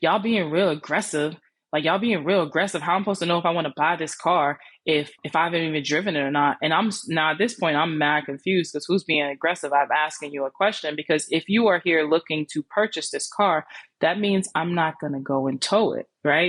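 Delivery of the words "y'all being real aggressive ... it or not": ordinary talk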